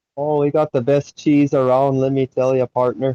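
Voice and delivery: high, put-on Wisconsin accent. Trying out different accents with someone else, you now switch to a Wisconsin accent.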